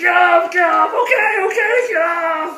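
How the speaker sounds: high, very slow, stretched-out, drawn-out yell. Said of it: "he's yelling at me".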